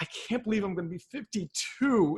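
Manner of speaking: mildly sarcastic, dry, glum, downbeat tone. Showing a speaker how to deliver a line about their age: slightly sarcastic, downbeat. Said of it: "a little bit of sarcasm".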